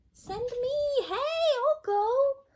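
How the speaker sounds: small squeaky voice, very high and very slow. Narrator reads an unseen volunteer calling down to Wolf, in a tiny voice. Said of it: "A tiny voice from up above said".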